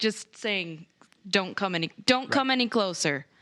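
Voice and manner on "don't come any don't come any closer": acted threatening, menacing tone. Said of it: "with my bow drawn".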